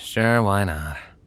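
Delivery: said with a sigh. Agreeing when asked to come along and leave everything behind, sighing.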